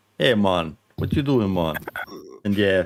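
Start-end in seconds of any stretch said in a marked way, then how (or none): 0.2-1.8 put-on, botched, fake Jamaican accent. Showing how he sounds drunk when he means to be scottish: fake jamaican accent. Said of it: "I pretend I'm Scottish and I sound Jamaican".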